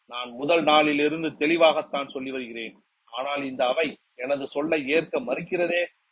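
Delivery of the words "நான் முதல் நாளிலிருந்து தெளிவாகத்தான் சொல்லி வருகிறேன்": usual speaking voice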